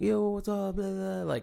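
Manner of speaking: very high, hyped-up bro voice. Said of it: "I'm not like".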